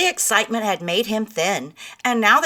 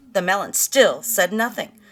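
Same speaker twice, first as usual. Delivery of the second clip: ordinary delivery, nothing marked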